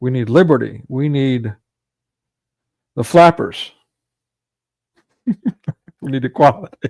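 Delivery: talking while cracking up laughing. Speaker recounting American history, laughing while talking. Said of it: "Sorry, I'm laughing".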